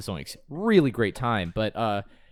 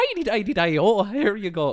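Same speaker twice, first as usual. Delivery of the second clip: put-on Irish accent pirate captain voice; 11 semitones higher, 4 dB louder than usual. Retelling a funny voice someone did on set: imitating an Irish Captain Hook voice. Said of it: "doing this, like".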